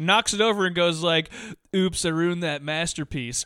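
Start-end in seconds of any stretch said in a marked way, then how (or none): 1.7-3.4 snide delivery. Retelling a movie scene where a man knocks over a pot: imitating a snide remark. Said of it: "in a snide way".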